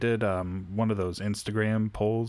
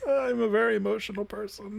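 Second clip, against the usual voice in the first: very high, fake blubbering sobbing voice; 12 semitones higher than usual. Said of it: "I can't stop crying".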